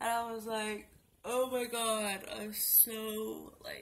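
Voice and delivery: talking through a yawn, words stretched. Vlogger who just woke up starts telling viewers about a nightmare, yawning while talking. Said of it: "I'm yawning".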